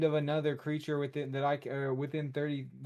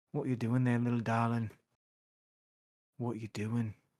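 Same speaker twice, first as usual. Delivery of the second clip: hushed whisper, spoken under the breath; 4 semitones lower than usual. Playing a character in a tabletop game, whispering to a slime. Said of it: "I whisper to it".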